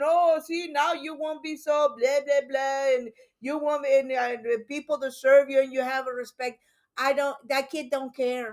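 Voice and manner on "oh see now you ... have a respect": scolding, ranting, laying-into father voice. Retelling what the father said to the kid: imitating a father yelling. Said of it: "and he's yelling at him".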